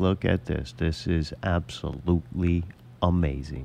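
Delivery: put-on flat, soothing, unexcited, low, slow monotone. Describing a man who stays calm even at exciting things: imitating a calm monotone. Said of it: "he's gonna talk in a very monotone, calm voice, even when something's very exciting".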